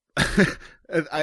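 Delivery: laughing while speaking. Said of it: "I'm laughing before I even read the headline".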